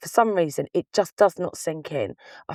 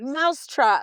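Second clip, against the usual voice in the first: slow, broken-language put-on voice, pitched higher; 6 semitones higher than usual. Retelling a shop visit, asking an assistant for mouse traps: imitating Steve. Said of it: "like that".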